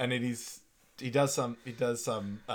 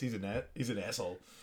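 mock mumbling, quieter; 6 dB quieter than usual. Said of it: "and he just mumbles".

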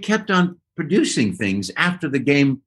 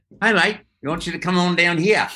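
poor put-on Australian accent, faster pace; 4 semitones higher than usual. Retelling the phone call from David Yarton, in a bad Australian accent. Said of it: "That's my worst Australian".

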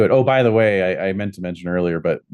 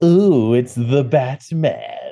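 very slow, drawn-out villain voice with swooping pitch; 5 semitones higher than usual. Saying "the Batman" with a sarcastic villain spin: Mark Hamill voice. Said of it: "Giving me a little bit of Mark Hamill".

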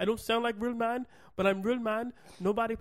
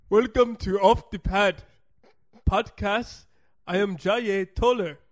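put-on mixed Spanish and Nigerian accent, louder; 8 dB louder than usual. Opening a podcast in a joking put-on accent: put-on mixed accent, Spanish and Nigerian. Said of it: "I don't even know what accent I'm doing right now".

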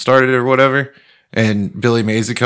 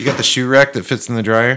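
normal talking voice

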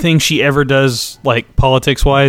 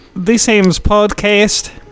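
fake Swedish accent, pitched up; 7 semitones higher than usual. Podcast co-host introduces the show in a fake swedish accent. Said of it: "I was trying to be Swedish".

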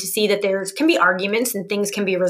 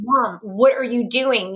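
put-on upset, tearful child voice; 3 semitones higher than usual. Retelling a son's words when he heard an argument: imitating an upset tearful child. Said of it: "he was really upset. He had tears in his eyes".

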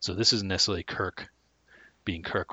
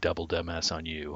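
ordinary talk, nothing marked

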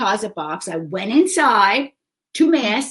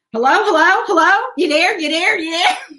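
insistent, high-pitched, repeating the same word; 8 semitones higher, 4 dB louder than usual. Contrasting a cousin's phone greeting with their own: imitating Rosalie answering the phone. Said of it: "Rosalie, when you call her, she's going".

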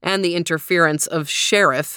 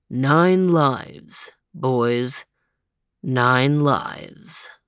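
heavy, solemn, ponderous, weighty delivery; 4 semitones lower than usual. Narrating a story's ending, a character answers his friends in a ponderous voice. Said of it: "in a ponderous voice".

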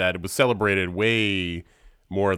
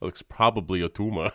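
put-on Austrian accent. Retelling the go-to work joke when a kid has a headache, austrian accent. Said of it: "why are you saying it like an Austrian?".

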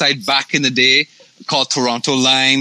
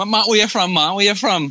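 pitched-up Barbadian (Bajan) island accent; 6 semitones higher than usual. Retelling how someone asked where he was from, Bajan accent. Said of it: "With the Bajan accent".

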